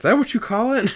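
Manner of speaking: high, mocking voice.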